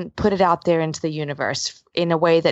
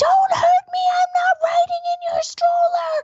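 put-on very high, shrieking scream of a defiant child. Describing a girl who refuses clothes and the stroller; imitating her screaming. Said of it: "She's screaming".

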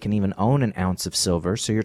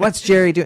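put-on worked-up, irate, high-pitched father voice outburst; 9 semitones higher, 5 dB louder than usual. Retelling a dad's reaction: imitating an angry dad. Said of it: "my dad gets all angry".

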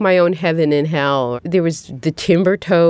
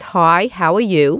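Brooklyn way of talking. Showing how they talk on the phone to a cousin, in a Brooklyn accent. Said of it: "suddenly you're talking like this".

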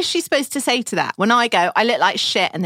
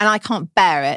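normal talking voice

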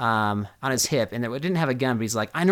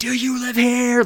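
mock furious yell, very high and loud; 10 semitones higher, 5 dB louder than usual. Retelling how an angry driver yelled a question. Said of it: "just starts yelling".

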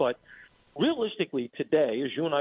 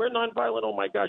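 put-on scream, higher pitch; 8 semitones higher than usual. Retelling a protester knocked off her beach chair, mock screaming. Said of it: "she starts screaming".

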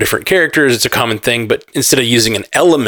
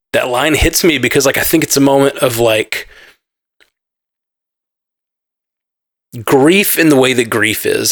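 getting emotional, moved, speaking much slower. Speaker explaining why a film line hits them, getting emotional. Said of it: "I'm getting emotional".

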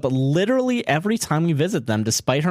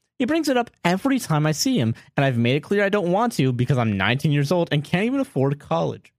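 plain

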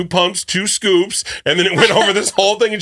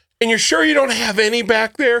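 sweet, gentle, pitched-up, really nice polite tone; 5 semitones higher than usual. Retelling how Ryan asked a barista about pumpkin: imitating Ryan asking really nicely. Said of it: "Really nice, really nice".

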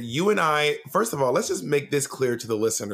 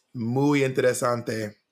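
slow Spanish spoken with a heavily anglicized pronunciation.

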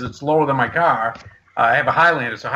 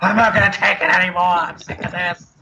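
put-on upset, fed-up screaming outburst; 4 semitones higher than usual. Retelling leaving the game upset, imitating own screaming. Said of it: "leaving that game screaming".

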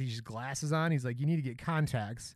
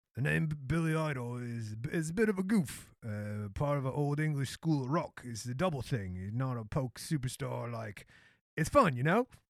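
put-on Cockney accent kept up throughout. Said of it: "keep the Cockney accent going".

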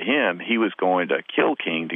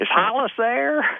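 very high, put-on Southern accent. Retelling phoning a stranger and asking for someone, put-on Southern accent. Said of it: "put on my best Southern accent".

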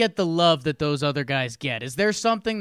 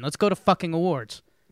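plain

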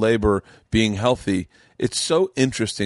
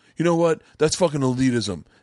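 mock angry voice, higher pitch; 5 semitones higher than usual. Imitating an imagined angry listener's reply: imitating an angry person. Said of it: "someone right now is angry".

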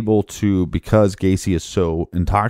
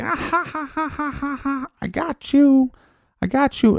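put-on drawn-out, very high, slow little-kid laughter. Retelling a man in a full clown getup taunting a tied-up person, imitating a kid's laughing. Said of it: "Just laughing like a little kid".

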